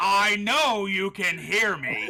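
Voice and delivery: shrill, booming, drawn-out. Calling out to characters who ignore him: raised voice. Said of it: "I just raised my voice".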